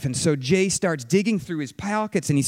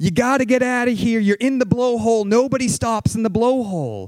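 mock, high-pitched shouted yelling; 5 semitones higher, 4 dB louder than usual. Retelling a rescue in howling wind, imitating someone yelling. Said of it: "Phil's yelling back at him".

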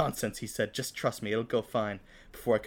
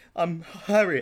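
stammering, higher pitch; 7 semitones higher, 5 dB louder than usual. Nervous, the narrator introduces himself to a laughing man, stammering. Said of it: "I stammered".

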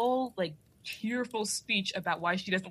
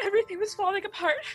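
very high, put-on, tearful fake crying voice; 11 semitones higher, 3 dB louder than usual. Retelling a tearful movie speech, mock crying. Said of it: "imagine I'm crying".

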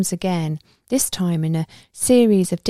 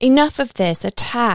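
knife-sharp, cutting voice, pitched up; 5 semitones higher than usual. A voice breaks through the trance and orders an attack: sharp voice. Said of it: "The sharp voice cuts through".

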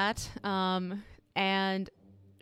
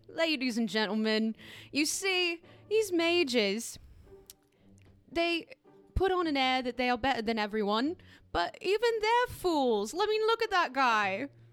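high-pitched, laughing, mocking put-on voice; 6 semitones higher than usual. Voicing a character mocking the mages to a crowd: laughing while speaking in character. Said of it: "she's doubled over laughing".

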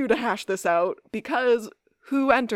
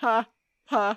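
sarcastic, fake "ha ha" laugh. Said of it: "Damon sarcastically goes".

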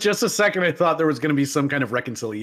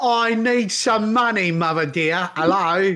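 put-on English accent with raised pitch; 6 semitones higher than usual. Imitating Prince Andrew asking his mother for money: Prince Andrew accent impression. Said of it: "the accent where it's like".

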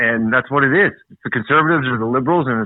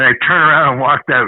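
usual speaking voice

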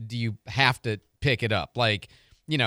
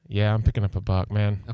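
sheepish and embarrassed, much lower pitch; 3 semitones lower than usual. Answering the other speaker's question, sheepishly embarrassed. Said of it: "You say it so, like, sheepishly embarrassed".

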